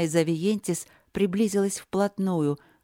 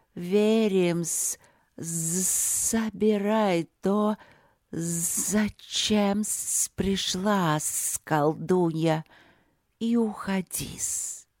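hissing, sibilant voice. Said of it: "прошипела Авиентис".

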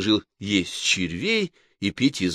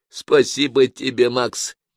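caustic, mocking, sarcastic, raised and pitched up; 5 semitones higher, 6 dB louder than usual. Henriette replies to Max's worried questions, sarcastically. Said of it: "язвительно говорит Генриетта".

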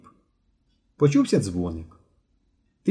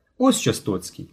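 ordinary delivery

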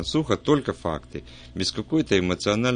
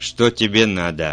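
demanding tone, slower; 6 dB louder than usual. Inspector Cramer stops abruptly on seeing the narrator and asks, demanding question. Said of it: "требовательно спросил".

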